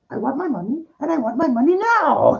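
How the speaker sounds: put-on old woman voice, pitched very high. Retelling a dumb commercial where an old lady demands her money: imitating an old lady in a commercial. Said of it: "this old lady goes".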